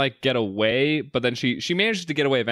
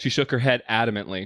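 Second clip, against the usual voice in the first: ordinary delivery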